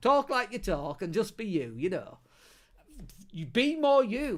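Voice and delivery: thick, broad Yorkshire accent, laid on heavy. Urging listeners to talk like themselves, going all Yorkshire. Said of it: "I'll go all Yorkshire now".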